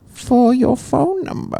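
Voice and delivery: very high-pitched character voice, jumping way up. Playing a Shark Tank investor making an offer: Martha voice. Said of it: "Finally got a different voice".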